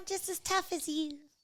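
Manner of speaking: tiny, squeaky, very high lightweight voice. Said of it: "that's your atom weight voice".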